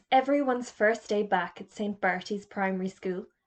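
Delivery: plain reading voice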